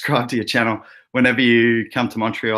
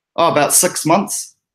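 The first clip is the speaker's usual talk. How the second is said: put-on strong New Zealand accent, pitched up; 6 semitones higher, 3 dB louder than usual. Telling an Australian joke, answering as a newly arrived Kiwi, in a New Zealand accent. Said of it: "strong Kiwi accent there".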